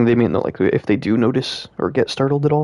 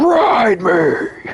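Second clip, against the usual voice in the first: super intense, urgent, high-pitched delivery; 8 semitones higher, 3 dB louder than usual. Retelling how the lion arrives in the old film: imitating a super intense Aslan. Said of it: "he's just, like, super intense about it".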